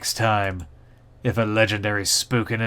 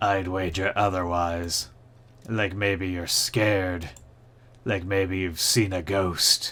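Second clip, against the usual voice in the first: put-on creaky ghostly voice, each word creaking like old wood; 2 semitones lower, 3 dB quieter than usual. A narrator voices the ghost Spooky Peter answering a greeting, in a creaky ghost voice. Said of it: "The ghost's voice creaks like ancient wood".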